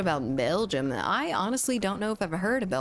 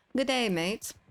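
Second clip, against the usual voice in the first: clumsy put-on Australian accent, pitched up; 6 semitones higher than usual. Attempting an accent right after saying they can't do it: bad Australian accent attempt. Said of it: "I don't know how to do it, um, an Australian accent".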